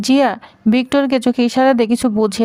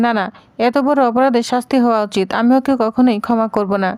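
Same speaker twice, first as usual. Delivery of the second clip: ordinary delivery, nothing marked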